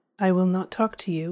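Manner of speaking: ordinary delivery, nothing marked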